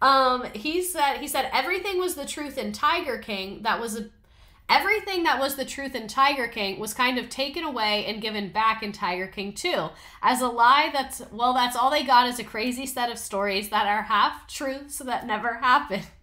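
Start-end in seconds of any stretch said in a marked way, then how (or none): none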